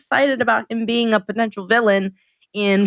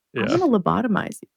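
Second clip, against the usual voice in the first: calm, matter-of-fact delivery with no fuss. Retelling Marquis's answer when teacher asks about his daughter: imitating Marquis calmly threatening. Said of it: "he says it so calmly".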